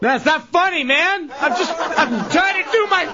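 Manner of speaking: high voice, laughing throughout.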